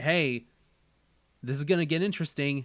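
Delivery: ordinary talk, nothing marked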